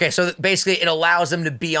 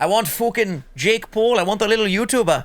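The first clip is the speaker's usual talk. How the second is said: put-on British accent with raised pitch; 5 semitones higher than usual. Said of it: "I just went British over here".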